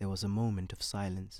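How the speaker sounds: ordinary delivery, nothing marked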